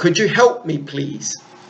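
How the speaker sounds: ordinary talk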